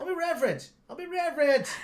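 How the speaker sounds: put-on New Zealand accent. Doing a film character's line after the other speaker says he's Kiwi: attempted Kiwi accent. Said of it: "He's supposed to be Kiwi though".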